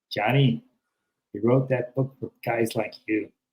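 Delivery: put-on Chicago accent, plain everyday talking. Retelling what a man said when he came up to him, in a chicago accent. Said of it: "he goes with his Chicago accent".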